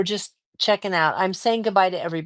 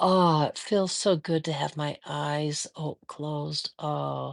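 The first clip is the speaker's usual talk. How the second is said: put-on drowsiness, lower, quieter, slower; 3 semitones lower, 5 dB quieter than usual. Speaker acts out themselves sewing and nodding off, imitating self dozing off. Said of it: "here's an imitation of me".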